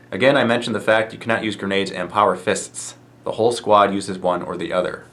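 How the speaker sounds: normal talking voice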